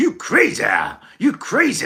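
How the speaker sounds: put-on American accent, high, slow, words drawn out. Speaker imitates another sort of american for a listener, in a put-on american accent. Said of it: "you're more of this sort of American".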